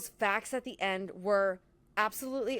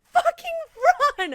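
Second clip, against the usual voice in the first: put-on screaming, higher pitch and louder; 9 dB louder than usual. Retelling yelling at a movie scene: retelling own screaming. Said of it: "I was screaming when he was like".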